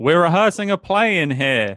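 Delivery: booming, very loud, high-pitched voice. Interrupted by companions entering the room, a character answers them very loudly. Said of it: "Dog Food says very loudly".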